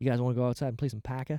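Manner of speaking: low put-on Boston accent, "poker" said as "Parker". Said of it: "You'd still do the Poe".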